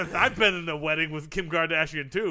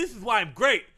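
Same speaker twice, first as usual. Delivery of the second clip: plain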